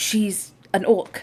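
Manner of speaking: quiet aside with the voice dropped, hushed. A character speaks quietly to Tyrus about Althera's sister-in-law, in a hushed tone. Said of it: "in a more little hushed tone".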